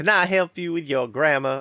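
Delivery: sugary Southern belle accent, laid on thick. Imagining a paperclip helper offering grammar help: Southern belle voice. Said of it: "had the voice of a Southern belle".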